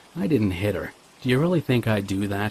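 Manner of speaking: usual speaking voice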